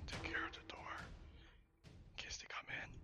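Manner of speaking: hushed whisper. A player speaks in character, telling Anya to watch the door: whispering. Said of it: "So I whisper to Anya".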